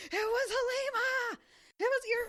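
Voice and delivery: very high, slow, drawn-out yelling. Describing a reader yelling at Egwene while she freaks out, mock yelling at a character. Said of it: "you're sitting there just yelling at her".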